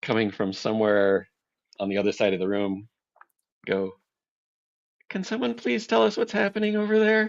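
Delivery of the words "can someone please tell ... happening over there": meek, small, very high timid voice. Narrating a scene, voicing someone calling from across the room in a timid voice. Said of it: "a timid voice".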